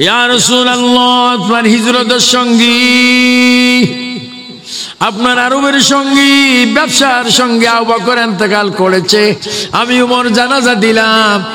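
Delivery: high, slow, pleading call, called out.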